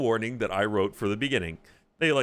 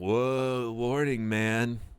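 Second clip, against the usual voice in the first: slow, dopey, spaced-out drawl. Joking that a four-twenty warning should sound doped up: stoned voice. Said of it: "Should it be all like doped up? Like".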